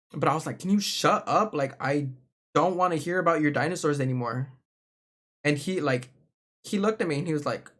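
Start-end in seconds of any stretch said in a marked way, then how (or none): 0.6-4.5 mock angry outburst. Retelling a time of snapping at a friend: imitating own angry outburst. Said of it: "I got so fucking mad at him".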